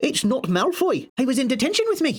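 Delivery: put-on poor high-pitched Scottish accent. Recapping an episode, quoting McGonagall in a bad McGonagall Scottish accent. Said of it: "Sorry for my offensive Scottish accent".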